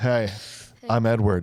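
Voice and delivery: put-on brooding voice. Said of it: "we're gonna do this about forty more times".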